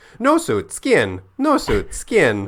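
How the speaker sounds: very high, squeaky, swooping dolphin-like voice. Quoting the dolphin from the show: squeaky dolphin voice. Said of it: "you were so spot on this dolphin".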